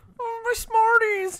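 very high little peewee voice, cross. Recalling a kid upset about his thrown-out Smarties, imitating his mock-mad peewee voice. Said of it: "a little peewee voice being mad".

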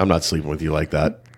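straight-faced, low, hushed deadpan, barely above a hush. Retelling what someone said on finding one bed, retelling a deadpan remark. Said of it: "rick deadpan looks at me straight and goes".

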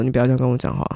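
calm, quiet, level voice. Retelling an argument where she cut him off, retelling a calm, quiet reply. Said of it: "用很冷静，然后很小声的声音说".

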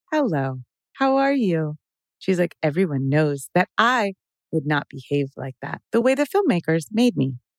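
put-on stilted, halting, upbeat voice. Imitating a woman from her videos: imitating a stilted upbeat voice. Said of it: "she has such a stilted, halting, much more upbeat, positive thing".

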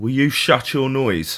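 put-on Manchester accent. A dad quoting his young son, imitating a Manchester accent. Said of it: "he's got a bit of a Manchester accent".

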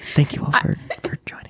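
gentle whisper. Thanking everyone while joking about mics: whispering gently. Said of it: "I'm gonna whisper so gently into them".

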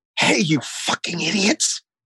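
high hushed whisper. Speaker recounts what he says to an inattentive audience, whispering. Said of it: "So I whisper".

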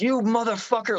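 mock shrieking at full volume, very high pitch. Retelling a staged argument where Chris screams at the speaker: imitating Chris screaming at full volume. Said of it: "full volume screaming".

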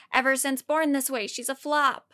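ordinary talk

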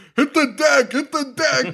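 play-acted very high, hammy barked yell. Describing a film scene, the speaker quotes a character, retelling a yell. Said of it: "he's just yelling".

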